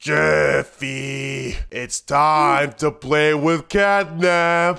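weird, strange, altered disguised creature voice. On the phone, Daddy speaks to Jeffy in a strange altered voice. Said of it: "Why does your voice sound like that?".

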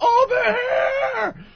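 mock shrill scream, long high drawn-out here. Recounting beeping the car and calling the others over: retelling a scream. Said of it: "I start screaming".

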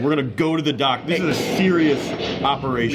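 plain

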